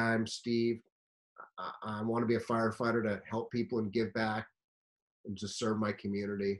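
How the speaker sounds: boring, soft, flat robotic monotone drone. Advising firefighter job seekers, demonstrating a weak self-introduction in a boring robotic monotone. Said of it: "as boring and robotic and monotone as that".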